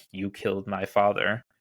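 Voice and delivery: whispering the line, hushed. Retelling how the episode ends, with her line to Peter, retelling a whisper. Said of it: "ends with her whispering".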